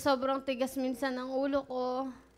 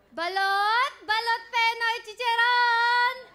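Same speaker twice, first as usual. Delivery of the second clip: very high, loud street vendor's cry; 11 semitones higher, 8 dB louder than usual. Asked to show how they called out while selling balut; shouted vendor call. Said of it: "Sumisigaw po".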